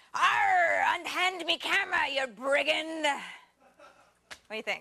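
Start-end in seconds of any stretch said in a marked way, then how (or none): 0.1-3.0 very slow put-on pirate voice, drawn-out arr. Doing a bit for a story because the writer asks, pirate voice. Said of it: "making me do a pirate voice".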